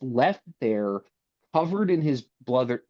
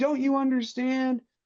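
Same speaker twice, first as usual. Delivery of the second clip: mock scream, higher; 12 semitones higher than usual. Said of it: "he screams".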